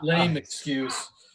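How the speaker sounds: slow, laughing, mock-offended sarcastic scorn. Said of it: "who don't know what sarcasm is".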